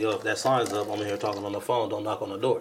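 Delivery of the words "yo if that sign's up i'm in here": ordinary delivery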